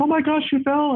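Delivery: very high, alarmed, freaked-out fussing. Explaining how young children learn to react, imitating a freaking-out parent. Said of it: "and is freaking out".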